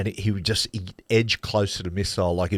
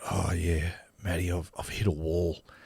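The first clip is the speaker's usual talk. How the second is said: put-on defeated voice, quieter; 2 semitones lower, 5 dB quieter than usual. Retelling a colleague answering wearily at the media centre: imitating Crash Craddock sounding defeated. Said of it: "the only time I've ever seen Crash defeated".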